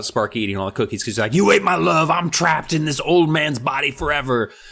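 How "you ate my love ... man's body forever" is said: acted, livid, outraged, furious outburst. Retelling a character who is upset about a dog eating his cookies: imitating someone furious. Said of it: "Steve is just rip shit".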